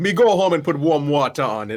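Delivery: loud put-on Jamaican accent. Retelling a video, voicing the jamaican guy told his skull is cracked: jamaican accent. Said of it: "talking to like a Jamaican guy".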